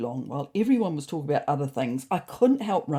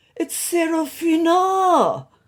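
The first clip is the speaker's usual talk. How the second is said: shrill, high, loud parroting; 13 semitones higher, 7 dB louder than usual. Narrator reads Ron mimicking Serafina in a high-pitched voice. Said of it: "mimicked Ron in a high-pitched voice".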